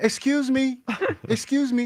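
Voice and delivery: high, slow, extra-polite, unthreatening voice.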